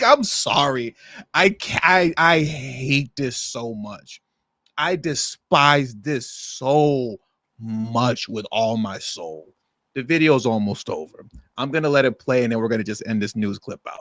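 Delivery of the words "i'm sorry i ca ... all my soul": upset, emotional, very slow, with "so" stretched. Apologizing while reacting to a news clip, getting emotional. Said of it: "I'm getting a little emotional".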